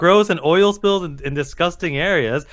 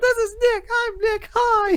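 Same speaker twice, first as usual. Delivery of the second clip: put-on mocking voice, higher; 3 dB quieter than usual. Imitating another speaker introducing himself: imitating Jet. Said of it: "Jet does sound like that".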